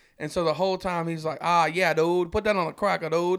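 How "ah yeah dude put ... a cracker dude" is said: put-on thick, heavy Louisiana accent. Telling others about a man who always talks that way, imitating a thick louisiana accent. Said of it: "his is thick, dude, like thick".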